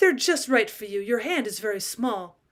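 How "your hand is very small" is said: ordinary delivery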